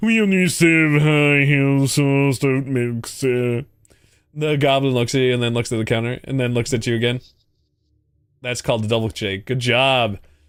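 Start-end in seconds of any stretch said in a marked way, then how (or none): 0.0-3.7 loud, slow, haughty, condescending, snobby tone. Playing a goblin at a counter answering a customer, use a snobby tone. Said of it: "answer in a snobby tone".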